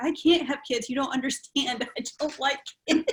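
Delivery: high, tearful, crying outburst. Retelling crying in the hospital right before the birth: imitating own past crying. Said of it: "I was in the hospital crying".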